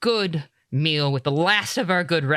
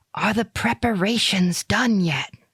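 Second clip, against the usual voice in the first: whispering, much higher; 4 semitones higher than usual. Storyteller voices a man leaning close to an intercom, whispering. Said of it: "leans closer to the intercom and whispers".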